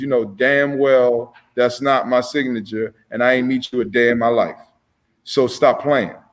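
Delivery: normal talking voice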